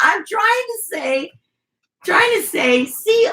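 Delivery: very high speech, giggling through the words. Retelling what he said to her over the phone, imitating him laughing while talking. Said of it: "And he's over here laughing".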